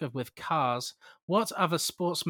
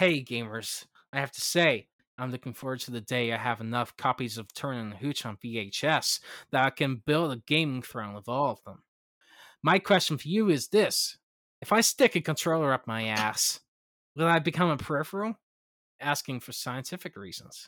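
put-on American accent, done for show; 3 semitones lower than usual. Reading out a submitted question to the hosts as an american accent impression. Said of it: "Was that your American impression?".

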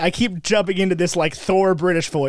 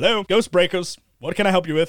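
ordinary talk, nothing marked

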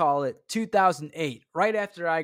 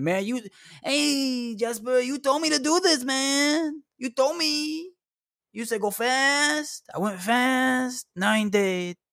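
very high, slow, dragged-out complaining tone; 10 semitones higher than usual. Imagining a dead viewer emailing to blame the speaker: imitating a complaining dead viewer. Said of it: "emails from people that are dead saying".

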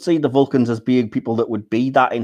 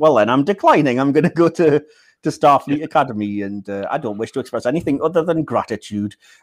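mock, heavy sarcasm throughout, as sarcastic as possible; 3 semitones higher than usual. Retelling a film scene, quoting the character Spock: imitating Spock, sarcastic. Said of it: "as sarcastically as you like".

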